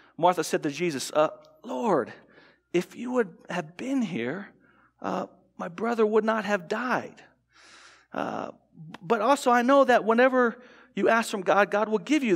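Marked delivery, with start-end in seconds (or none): 1.1-12.4 dazed, bewildered, hesitant, halting delivery. Reading Martha's words to Jesus aloud with a chosen tone: stunned and confused. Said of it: "I read it with this tone".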